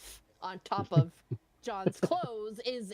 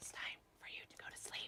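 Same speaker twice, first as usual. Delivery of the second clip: rushed, breathy, very quiet whisper. During a tabletop game, one character whispers to another: whispering. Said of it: "She's gonna whisper to him".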